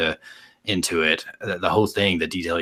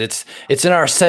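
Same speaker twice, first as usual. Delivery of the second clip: very high, loud, breathless panting with stammered start; 10 semitones higher, 7 dB louder than usual. Voicing a character who tries to name where the box is: breathing really heavy. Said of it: "He's breathing really heavy".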